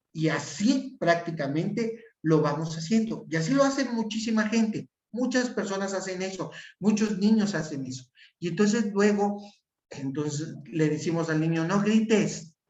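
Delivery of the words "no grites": loud, angry yelling shout. Showing how a parent tells a child not to shout, shouting. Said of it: "Estoy gritando".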